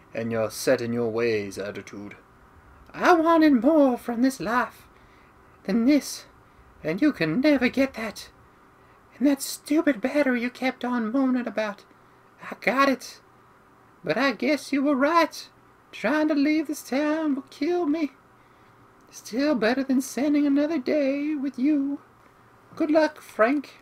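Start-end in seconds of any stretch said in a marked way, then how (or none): 3.0-23.7 put-on, very high, swooping woman's voice. Voicing a female character addressing another character, in a lady's voice. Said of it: "Why did I do a lady's voice?".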